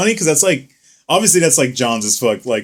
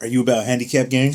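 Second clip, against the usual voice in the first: mock whispering; 2 semitones lower, 4 dB quieter than usual. Retelling how someone at a tournament came up with a question: imitating someone whispering. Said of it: "came up to me and whispered in my ear".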